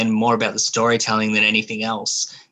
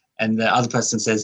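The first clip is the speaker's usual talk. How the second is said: normal talking voice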